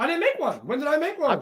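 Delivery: worked up, voice squeaking. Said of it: "Your voice is starting to get squeaky".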